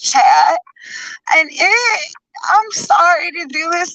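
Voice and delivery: forced fake crying voice. Apologizing to chat before a demand: fake forced trying-to-cry voice. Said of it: "fakest, forced, trying to cry voice".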